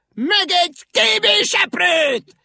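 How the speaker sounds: sharp, very high, piercing shrill shriek. Brave ink rabbit looks up at the rooftops, giving a sharp shriek. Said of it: "élesen rikkantotta".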